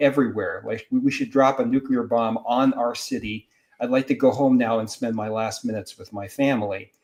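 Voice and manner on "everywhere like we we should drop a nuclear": plain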